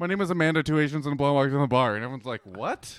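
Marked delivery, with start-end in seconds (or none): 0.0-1.9 fast mumbled rush, words running together. Retelling a woman's joke that bombed at the microphone, imitating her fast mumbling. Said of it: "She said it so fast and mumbled into the microphone".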